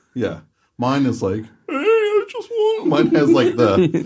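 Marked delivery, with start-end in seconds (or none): 1.4-2.8 very high put-on voice with audible cracks. Showing own version of Wally's voice: Wally voice with cracks. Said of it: "the cracks showing my Wally".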